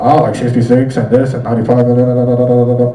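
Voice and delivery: radio traffic reporter voice, brisk on-air rundown delivery. Describing radio traffic reports, imitating a fast-talking traffic reporter. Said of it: "you'll hear the traffic person talking really fast".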